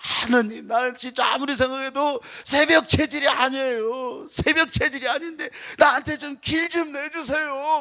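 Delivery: mock weeping, high and tearful pleading. Retelling overhearing a man praying across the row at dawn prayer: imitating tearful praying. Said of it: "굉장히 막 울면서 기도하는 것 같아".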